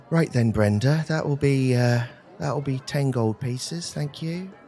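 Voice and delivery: quietly spoken, soft, gentle manner. Game master voicing a tattooed man speaking to Brenda, very softly spoken. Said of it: "He's very softly spoken".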